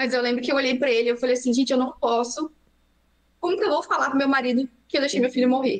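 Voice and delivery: voice at the edge of crying, held in. A mother recounts the moment she looked at her son, holding back tears. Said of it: "eu não vou conseguir não chorar".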